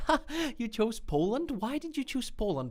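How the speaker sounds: put-on condescending tone, pitched very high. Imitating people at conferences questioning a choice, in a mock-condescending tone. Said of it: "in a very condescending tone".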